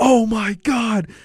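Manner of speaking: mock, very high, gloating shout. Retelling an unbelievable kick, the speaker reenacts yelling at a coworker who bet on Argentina; retelling a yell. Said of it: "I yelled at my coworker".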